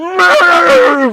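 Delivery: piercing yell, very high and loud. Retelling being stuck behind a slow driver: imitating herself screaming. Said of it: "and I'm just going".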